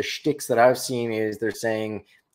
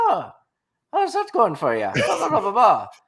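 put-on Irish accent, much higher, louder; 11 semitones higher than usual. Talking about how accents change the voice, demonstrating an Irish accent with the voice going up. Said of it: "Irish, your voice goes up like an octave".

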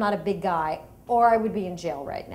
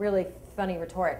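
normal talking voice

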